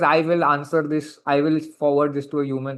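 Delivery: ordinary delivery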